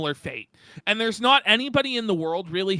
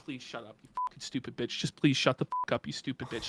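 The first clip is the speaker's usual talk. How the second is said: put-on stressed, fed-up, exasperated whisper; 7 semitones lower, 9 dB quieter than usual. Voicing the thoughts of a man on video who looks stressed: imitating a stressed man. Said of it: "You can just tell he's like".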